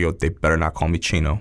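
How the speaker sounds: usual speaking voice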